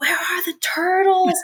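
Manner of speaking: very high, shrieking scream. Recalling a favorite Office quote he thinks of on the golf course: imitating Michael Scott screaming. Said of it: "I always think him screaming like".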